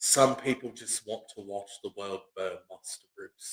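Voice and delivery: calm, very quiet British accent. Speaker shows how you can talk calm like Michael Caine: calm Michael Caine impression. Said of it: "you can talk calm like this".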